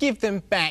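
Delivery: squealing, pleading, little pig-like cry. The little pig calls up to a giggling squirrel in a tree, squealing. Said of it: "squealed the little pig".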